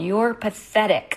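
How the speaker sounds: angry, high, flung-out yelling outburst. A daughter recalls yelling at her mom in front of everybody: retelling own yell. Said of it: "I just yelled".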